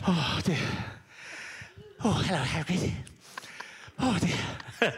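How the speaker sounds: puffing between words. Doing an impression to make someone laugh: mock-breathless Harry Potter impression. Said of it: "he's always out of breath because he's just come off the Quidditch pitch".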